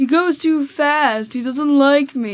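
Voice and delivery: slow, drawn-out, complaining whine. Reading a text aloud, voicing a student's complaint about the teacher in a whiny voice. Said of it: "was a good whiny voice".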